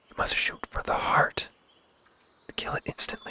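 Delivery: faint, tiny, quiet, barely voiced whisper. Voicing a character who points at a deer, whispering in the quietest little voice. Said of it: "he whispers in the quietest little voice".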